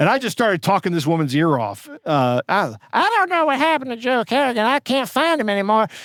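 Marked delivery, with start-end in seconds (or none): 2.5-5.9 put-on old lady voice, pitched high. Retelling talking a woman's ear off, in Mabel Johnson old lady voice. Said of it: "my old lady voice that I do".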